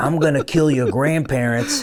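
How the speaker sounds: mock whisper. Retelling how Governor Cuomo leaned in on stage: imitating Cuomo whispering. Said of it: "as he whispers in my ear".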